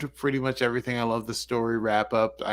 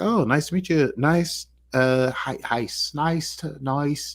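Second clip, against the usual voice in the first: halting, stumbling, slow put-on Irish accent; 3 semitones higher than usual. Retelling a scene where a woman greets a man's son: put-on Irish accent. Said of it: "don't do your Irish".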